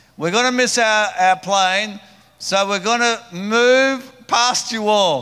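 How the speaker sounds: very loud, high announcement, move drawn out. Speaker retells addressing a long line they had to get past: retelling a loud announcement. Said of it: "I said in a loud voice".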